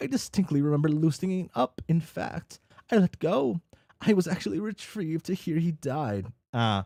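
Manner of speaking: ordinary delivery, nothing marked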